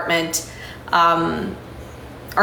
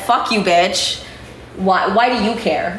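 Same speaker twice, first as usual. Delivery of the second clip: plain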